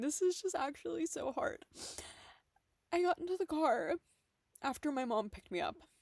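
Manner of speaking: crying speech. Speaker recounts getting into the car after their mom picked them up, crying. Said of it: "I'm sorry for crying".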